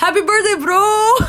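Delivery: very high, strange, odd delivery. Echoing the co-host's birthday wish back: imitating the co-host. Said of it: "why'd you say it like that?".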